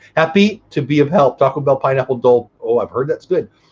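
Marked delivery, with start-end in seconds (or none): none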